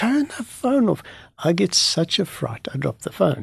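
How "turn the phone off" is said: mock fierce, high shouting. Retelling how a soldier at a metal detector yelled: imitating a soldier shouting. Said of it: "with a frown and a scream, he shouts at me".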